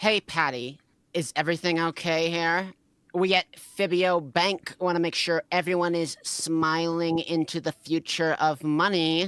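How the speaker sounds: bitchy snide voice. Playing the co-worker Sarah asking Patty a question: bitchiest tone she could muster. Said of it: "in the bitchiest tone she could muster".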